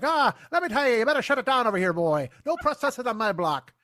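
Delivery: put-on old-time Irish New York accent. Describing a cop walking over, imagining him as a 1930s irish beat cop. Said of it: "I'm sure he didn't talk like that".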